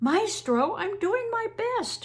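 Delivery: very high, trembling, wavering, quavering voice. Narrating a scolded man's reply to his maestro, in a quavering voice. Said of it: "Marco said in a quavering voice".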